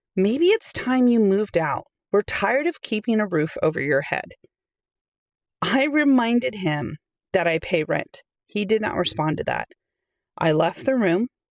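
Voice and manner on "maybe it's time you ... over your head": usual speaking voice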